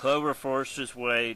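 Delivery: plain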